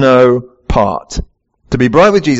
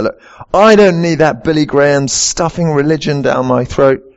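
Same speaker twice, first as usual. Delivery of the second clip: ordinary talk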